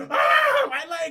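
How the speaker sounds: shrill, full-throated, very high, loud screaming. Recapping a scene where a man gets set on fire: imitating a scream. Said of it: "And he's screaming".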